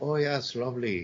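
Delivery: understated, gentle Irish accent, toned down. Showing a soft Irish accent, not an exaggerated one: soft Irish accent. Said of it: "it's soft ver-, versus someone just doing this drunk Irish farce".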